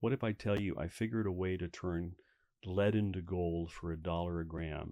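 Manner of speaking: plain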